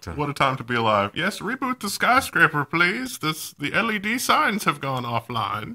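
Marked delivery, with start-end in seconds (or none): 1.1-5.8 terrible, high-pitched put-on British accent. Joking about a rebooted skyscraper sign: attempt at a British accent. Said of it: "Is that your attempt at a British accent?".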